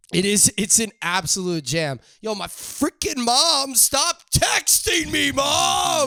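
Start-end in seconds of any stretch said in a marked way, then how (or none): 2.2-6.1 slow, high, rising drawn-out yell, "mom" stretched out. Getting texts from mom mid-recording and yelling at her: yelling at mom. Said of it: "I don't mean to yell at my mother".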